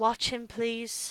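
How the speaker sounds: low, hushed, very quiet, almost under the breath. Game master voicing a character addressing the party before she leaves, in a low voice. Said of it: "just in a low voice looks at you all and goes".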